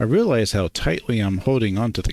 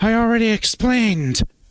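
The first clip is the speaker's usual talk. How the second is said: very high whiny voice, pitched way up; 13 semitones higher than usual. A narrator reads Duke's line as Duke kicks his feet around, high-pitched whiny voice. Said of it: "with a high-pitched, whiny voice".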